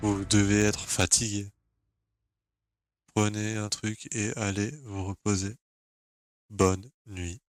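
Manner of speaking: put-on robot voice. Retelling what Pierrot said to him, in Pierrot's robot-like voice. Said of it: "il me parle comme un robot".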